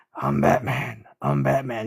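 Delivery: deep, raspy whisper. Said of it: "with lots of whispering".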